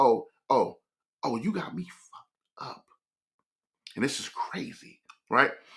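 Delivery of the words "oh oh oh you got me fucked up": put-on incredulous voice, quieter. Retelling a silent look given to a partner: voicing a silent crazy-eyed look. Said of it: "I give her a crazy eye".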